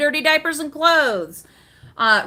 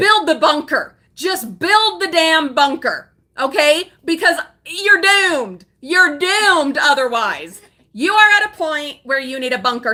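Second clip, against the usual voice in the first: loud, shouted, worked-up ranting yell; 3 dB louder than usual. Addressing the listener directly, the speaker is yelling. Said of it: "Sorry, I'm yelling at you".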